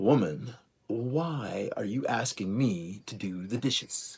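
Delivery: put-on pretentious arrogance. A speaker acts out how someone might answer their mom, in a mock-arrogant tone. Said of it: "sort of arrogant kind of tone".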